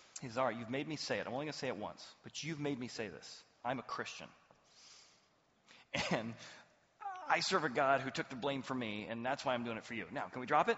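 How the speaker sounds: grudging, unwilling, almost reluctant tone. Retelling a boss's words to an employee: imitating a reluctant admission. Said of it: "almost reluctant".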